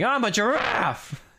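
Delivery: put-on, mad, high, angry shouted yell. Quoting a line from a family video clip: imitating someone yelling angrily. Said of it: "he sounds like he's yelling it, like he's mad".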